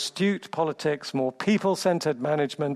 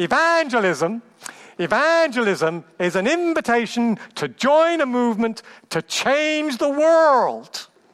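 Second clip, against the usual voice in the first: put-on enthusiastic American accent, very slow and loud; 8 semitones higher, 6 dB louder than usual. Quoting a man's line on evangelism: imitated american accent. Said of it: "I'm going to do my American accent now".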